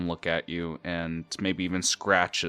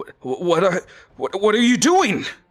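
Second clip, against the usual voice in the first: very high, loud, flustered stammering; 14 semitones higher, 8 dB louder than usual. Narrating a character who sees someone behind him, stuttering. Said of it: "begins to stutter".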